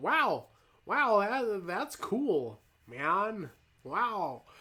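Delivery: very slow, swooping, dazzled, impressed dude voice. Speaker shows how someone who thinks something is cool sounds, imitating someone impressed. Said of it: "That was my impersonation of someone who's like thinks something's cool".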